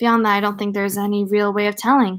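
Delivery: ordinary delivery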